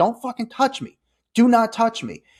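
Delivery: high, put-on angry yelling with cursing. Retelling a fight at a red carpet event: retelling making a scene, yelling. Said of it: "I start making a scene now".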